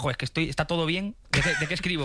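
ordinary delivery

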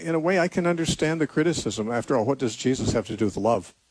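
ordinary delivery

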